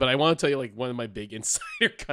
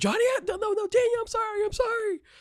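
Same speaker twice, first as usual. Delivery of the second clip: mock screaming voice with much higher pitch. Recounting a scene after someone gets disqualified, retelling a screamed apology. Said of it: "he starts screaming that he's sorry".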